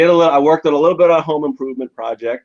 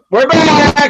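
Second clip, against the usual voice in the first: shrill, very high, loud shouted yell; 5 dB louder than usual. The host returns to the show, addressing the Cagesiders: yelling. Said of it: "why are you yelling?".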